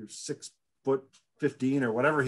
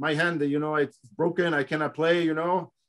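put-on French accent, broken English; 4 semitones higher than usual. Retelling what a player said to an opposing player, broken french accent. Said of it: "with his broken French accent".

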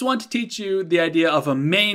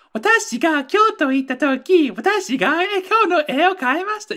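put-on much higher-pitched, silly girl's voice. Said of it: "You sound like an idiot".

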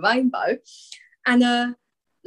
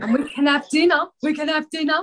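put-on Essex accent, higher pitch; 6 semitones higher, 3 dB louder than usual. Inviting Stacey to come on the show: Stacey Solomon impression. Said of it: "She's doing you now, Stacey".

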